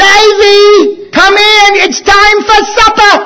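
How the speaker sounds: put-on English accent, calling out. Retelling how she called him in from baseball for supper, english accent. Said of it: "she always had that very distinct English accent".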